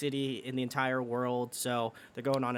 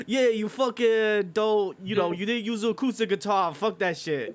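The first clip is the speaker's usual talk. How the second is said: booming, loud Italian mobster voice, pitched up; 9 semitones higher, 8 dB louder than usual. Imitating a man they are discussing, in an italian mobster voice. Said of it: "sounded like a fucking Italian mobster".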